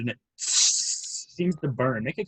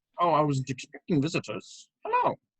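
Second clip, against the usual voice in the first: put-on friendly, swooping old woman character voice. Voicing an old woman greeting unexpected visitors at the stairs: old woman voice. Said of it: "an old, friendly-looking woman in a shawl".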